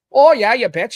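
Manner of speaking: bright, loud regional Midwestern accent. Speaker with British guests shows a real proper regional accent: Midwestern accent. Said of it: "try to do a real proper Midwestern".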